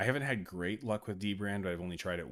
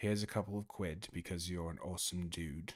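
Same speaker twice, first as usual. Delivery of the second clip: clumsy, unsure put-on British accent; 4 dB quieter than usual. Retrying a line after feeling the first attempt went wrong: attempted put-on accent. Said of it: "I don't think I did that right".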